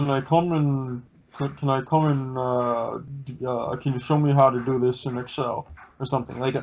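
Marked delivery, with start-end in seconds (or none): 0.1-5.7 imitated mushy mumbling, as with mouth full. Imitating a coworker who talks mushily: imitating mushy mumbling speech. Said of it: "he talks like he has mashed potatoes in his mouth".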